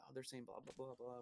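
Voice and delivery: very soft, hushed half-whispered aside. Retelling translating a movie for mom in the theater: imitating own half-whisper. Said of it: "whispering to her".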